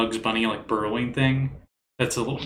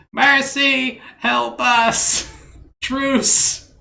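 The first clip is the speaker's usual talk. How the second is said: very high, shrill, raspy goblin yell; 13 semitones higher, 8 dB louder than usual. Game narrator voicing a goblin yelling from inside a wagon, raspy goblin voice. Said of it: "yelled in common from a raspy goblin voice".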